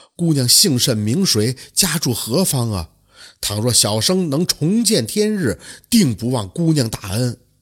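ordinary delivery

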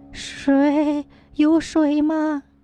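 faint, strengthless moan. A narrator voices a starved woman just coming to, weak, feeble moaning. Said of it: "有气无力的呻吟道".

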